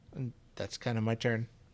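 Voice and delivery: normal talking voice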